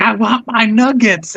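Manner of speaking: high freak-out with words dragged out. Retelling what a woman said to a server, imitating someone freaking out. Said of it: "she's like freaking out".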